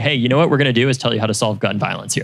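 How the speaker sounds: ordinary talk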